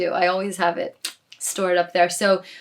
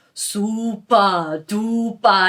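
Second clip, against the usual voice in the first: put-on super duper said with a Swedish accent. Retelling how the studio manager said it: imitating his swedish accent. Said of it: "in his Swedish accent".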